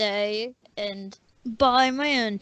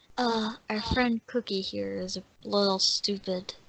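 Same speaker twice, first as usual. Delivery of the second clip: secretive, close half-whisper; 4 dB quieter than usual. A game narrator voices a character leaning in to half-whisper into someone's ear. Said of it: "I'm gonna whisper to his ear".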